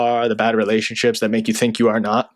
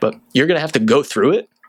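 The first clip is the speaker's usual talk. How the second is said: voice breaking and cracking mid-line; 4 semitones higher than usual. Speaker advising listeners, voice cracking again. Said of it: "Kind of cracked again".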